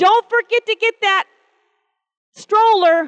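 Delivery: mock angry scolding voice. Retelling what a young wife told her husband at an amusement park, mock-angry wife's voice. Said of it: "she was saying it in an angry voice".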